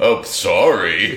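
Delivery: scornful, sneering tone. A narrator recounting a story voices a character's insincere apology, sneering. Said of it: "with kind of like a sneer in his voice".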